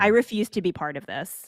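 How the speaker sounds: ordinary talk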